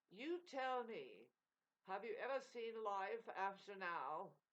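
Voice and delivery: slow, put-on English accent. Telling a story, the speaker gives the master's answer in an English accent. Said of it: "an English accent to it".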